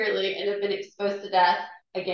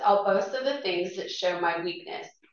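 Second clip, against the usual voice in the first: ordinary talk, nothing marked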